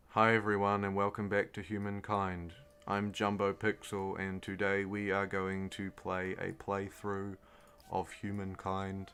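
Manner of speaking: lifeless, low, even, flat monotone drone. Showing the opposite of accentuating words in a video intro: flat monotone. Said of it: "the opposite would be".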